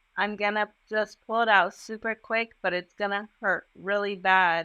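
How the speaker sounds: ordinary talk, nothing marked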